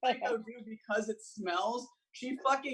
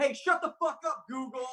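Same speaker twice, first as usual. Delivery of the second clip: mock, mild, half-yelled sharp snap; 3 semitones higher than usual. Retelling someone in the bathroom yelling at Google: imitating someone yelling. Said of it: "she's just yelling".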